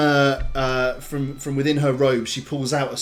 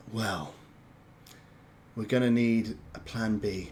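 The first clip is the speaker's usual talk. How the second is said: weary exasperation, lower and quieter; 4 semitones lower, 8 dB quieter than usual. Voicing Achak with her hand clasped to her forehead: exasperated sigh as Achak. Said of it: "clasps her hand to her forehead".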